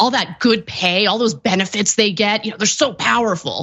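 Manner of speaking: mocking, faux sarcastic tone. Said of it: "do your sarcastic tone".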